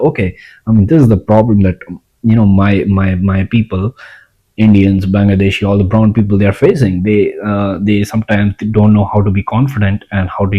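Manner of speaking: plain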